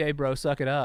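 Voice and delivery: ordinary talk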